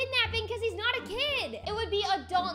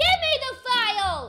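yelling, shouting with raised voice; 2 semitones higher, 7 dB louder than usual. In a scene, demanding the file from someone who refused to give it, yelling. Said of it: "stop yelling".

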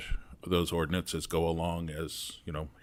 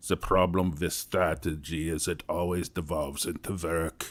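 put-on Austrian accent. Quoting a management consultant to people who wanted to be strategic planners, in Peter Drucker's Austrian voice. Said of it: "in his Austrian voice".

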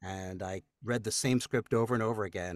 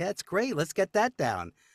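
high, excited, eager voice.

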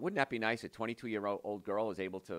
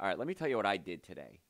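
mock, smug, teasing, joking tone. Retelling a joking reply to a patient: imitating own smug joking tone. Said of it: "I kind of very smugly, jokingly said".

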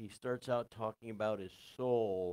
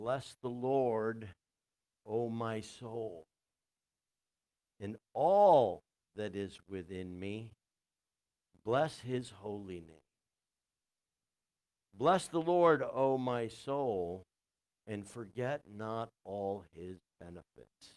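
slow, deliberate reading, each phrase weighed. Speaker reading aloud what David writes, reading slowly. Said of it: "read it slowly".

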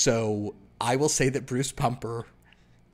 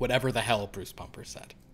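ordinary talk, nothing marked

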